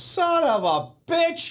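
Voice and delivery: stunned, high, slow, drawn-out exclamation.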